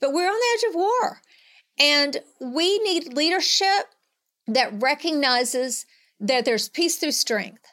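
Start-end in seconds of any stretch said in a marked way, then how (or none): 0.0-3.9 high, rising, passionate urgency. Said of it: "I can hear the passion in your voice".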